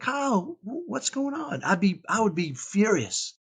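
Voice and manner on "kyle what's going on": slow, tender, loving, raised pitch. Recalling how she would respond when he was furious, imitating her loving tone. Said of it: "she would say it so lovingly".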